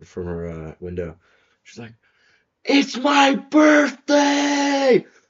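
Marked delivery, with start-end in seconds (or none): 2.6-5.0 put-on very loud, very high, shrill drunken shriek. Retelling how a drunk girl yelled from her window: imitating a drunk girl screaming. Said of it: "this girl screamed out".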